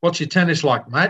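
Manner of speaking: put-on Australian accent. Retelling a phone call from the managing director, in Rick Dovey's Australian accent. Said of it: "that was an Australian accent".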